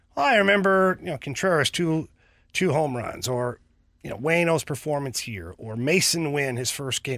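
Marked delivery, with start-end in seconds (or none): none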